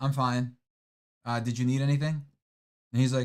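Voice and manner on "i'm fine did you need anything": mock rude, brusque tone. Retelling a phone call with a coworker: imitating own rude reply. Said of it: "Oh, that was rude".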